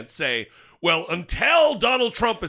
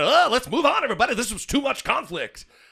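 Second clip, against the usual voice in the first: pitched-up radio DJ announcer delivery; 6 semitones higher than usual. Speaker moving the group on from a topic, in a DJ voice. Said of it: "I'm doing the D J voice a lot today".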